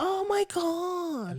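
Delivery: high, drawn-out mock pleading voice.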